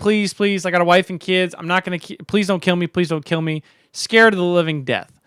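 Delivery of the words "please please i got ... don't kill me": put-on desperate pleading tone. Retelling a cartoon story where a driver begs the Joker: imitating someone pleading.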